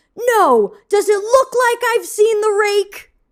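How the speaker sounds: high-pitched, shrill yelling. Retelling the neighbor boy's reply to his mother: imitating Bobby yelling back. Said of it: "he yells back".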